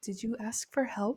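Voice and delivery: small, soft, eerie creepy little voice. Retelling a book scene, a little voice from the pit speaks up; small creepy voice. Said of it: "like some s- super creepy shit".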